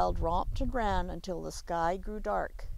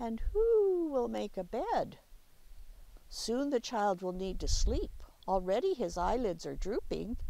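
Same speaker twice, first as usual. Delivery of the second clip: usual speaking voice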